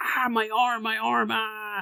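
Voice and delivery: exaggerated fake pain. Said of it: "being super exaggerating".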